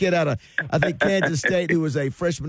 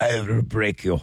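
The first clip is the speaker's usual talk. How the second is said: put-on Russian fighter voice, lower pitch; 6 semitones lower than usual. Imagining a Russian basketball player taunting a competitor: Ivan Drago voice. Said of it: "he walks up to a, his, his competitor and he goes".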